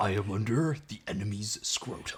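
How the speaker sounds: soft, quasi robot-hero leader voice. Copying how the other speaker read a movie line, quasi Optimus Prime voice. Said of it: "in like a quasi Optimus Prime voice".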